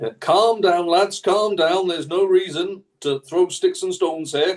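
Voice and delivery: put-on northern English Yorkshire accent. In a roleplaying game, a player speaks in character in a yorkshire trade union accent. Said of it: "In my best Yorkshire trade union accent".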